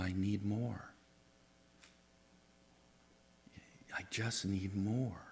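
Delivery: put-on tiny, soft, slow little-kid voice. Describing someone snuggling into your shoulder and speaking in a little bitty voice. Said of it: "in that little bitty voice of".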